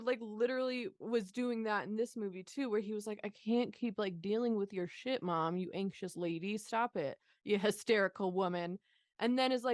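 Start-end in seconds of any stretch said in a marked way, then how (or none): none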